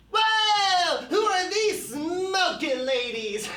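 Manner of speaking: very high, drawn-out stoner toy voice. Showing off a rare stuffed toy, the speaker voices it: stoner toy character voice. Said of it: "I like to do a little character voice for him".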